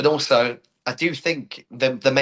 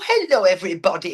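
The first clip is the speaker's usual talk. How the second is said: put-on mumsy, cute older dame voice, much higher; 7 semitones higher than usual. Actor demonstrating the voice they use playing a Dame: mumsy, cute Dame voice. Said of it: "my voice is sort of like I do like a".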